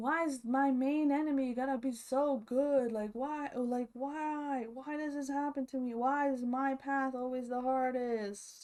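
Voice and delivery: loud, screamed, aggrieved yelling. Retelling a DR of Quinn lying on the couch: imitating Quinn screaming. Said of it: "he's, like, screaming at us".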